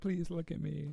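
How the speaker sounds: high little dog voice. Voicing the dog trying to get attention: imitating the dog. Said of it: "He's like".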